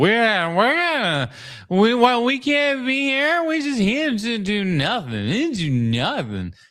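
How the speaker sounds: mock drunk talk, very high, slow, halting, rambling. Retelling what two women in a theater said: imitating drunk women. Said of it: "they are just drunk as all hell, just going".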